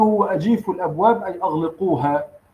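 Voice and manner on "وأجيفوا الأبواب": ordinary delivery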